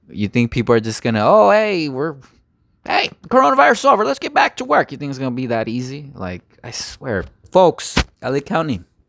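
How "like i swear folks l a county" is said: voice breaking up and cracking. Speaker addressing folks and LA County directly, voice cracking. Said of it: "my voice is cracking".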